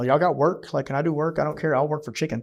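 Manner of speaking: plain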